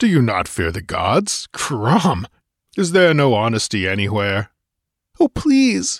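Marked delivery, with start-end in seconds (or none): 5.2-6.0 very high, quivering, terrified begging. A woman caught acting as the oracle pleads with Conan: begging, quivering with fright. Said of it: "she begged, quivering with abject fright".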